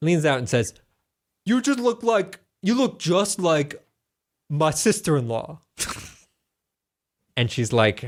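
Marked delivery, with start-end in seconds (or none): 1.4-5.6 put-on, pitched-up Italian accent. Retelling what a man leaning out of the window said to a woman, italian accent. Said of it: "Italian accent".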